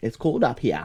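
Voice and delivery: Maine accent with dropped r sounds. Joking about the cold by showing off the accent: Maine accent, dropped R sounds. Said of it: "I'll use my Mainer accent".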